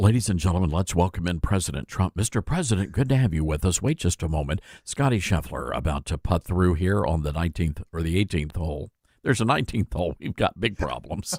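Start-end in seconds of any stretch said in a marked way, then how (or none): 0.0-8.9 hushed, announcer-style whisper, much lower in pitch. Co-host asks for a golf voice; speaker answers in a hushed golf-announcer whisper. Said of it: "you have to whisper".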